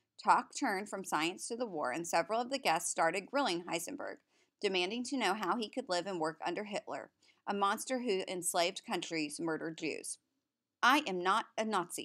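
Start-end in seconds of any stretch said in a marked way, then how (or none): 10.8-12.1 guarded, defensive voice, very slow and deliberate. Heisenberg, grilled by dinner guests, answers them, defensive. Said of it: "Heisenberg said defensively".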